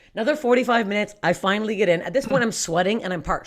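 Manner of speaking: normal talking voice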